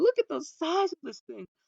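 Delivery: very high-pitched, awestruck, mesmerized marvelling. Retelling a father's words heard in the background, imitating a mesmerized dad. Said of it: "this man was so mesmerized".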